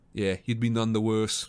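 ordinary delivery

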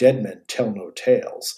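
low, slow, menacing tone. Retelling Superman's threat from the radio show: imitating Superman menacing. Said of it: "he's menacing when he says it".

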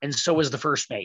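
usual speaking voice

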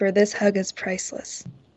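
whispering. Hugging a grateful old woman back in character: whispering. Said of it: "I hug her back and I whisper".

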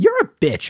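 bright, friendly, cheery chirp, very high. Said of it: "the combination of the cheeriness".

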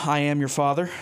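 ordinary talk, nothing marked

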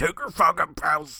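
put-on weird deep, quick voice. Repeating a commander's line from a clip: imitating a weird deep, quick voice. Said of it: "He says it so quick".

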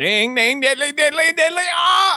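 very high-pitched, silly exclamation. Retelling laughing in a meeting at a remembered line: imitating Flanders. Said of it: "I'm hearing going".

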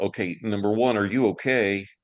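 ordinary talk, nothing marked

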